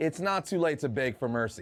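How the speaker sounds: ordinary delivery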